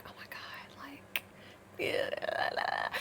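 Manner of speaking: hushed, breathy, gushing whisper. Retelling sitting inside with friends while talking about him: imitating own past whisper.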